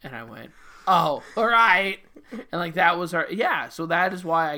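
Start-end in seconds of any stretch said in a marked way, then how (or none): 0.9-2.0 high, loud, gormless, dim-witted voice. Retelling own reply while playing a dimwit in a sketch: imitating own dimwit role. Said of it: "a dimwit".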